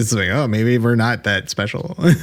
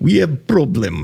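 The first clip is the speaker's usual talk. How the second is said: put-on Russian accent on English; 3 semitones higher than usual. Answering a request from the others to do a Russian accent. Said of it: "do a Russian. You got a good Russian".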